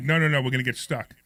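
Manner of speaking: ordinary talk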